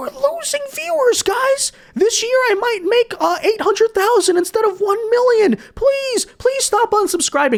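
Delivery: put-on very high, overdramatic sobbing whine. Mocking a man upset about losing viewers, imitating someone crying. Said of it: "He's like crying about it".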